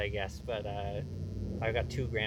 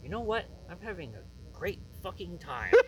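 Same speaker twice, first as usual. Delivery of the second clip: mock deeply sincere, very high-pitched earnest voice; 9 semitones higher than usual. Retelling what Dingbo said to you over drinks after the show, imitating someone very earnest. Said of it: "Dingbo just very earnestly said to me".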